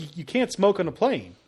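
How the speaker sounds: ordinary talk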